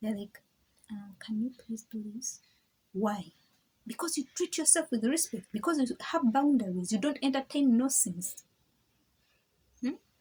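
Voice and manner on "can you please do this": mock-polite, lowered voice, much quieter. Speaker acts out how people who came yelling speak once they arrive: imitating a quiet polite request. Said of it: "They cut their volume".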